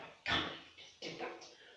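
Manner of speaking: muttering under the breath. Explaining what muttering is, the speaker demonstrates muttering under breath. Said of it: "Somebody mutters under, under their breath".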